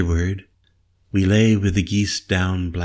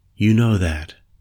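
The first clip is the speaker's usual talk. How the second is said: ordinary delivery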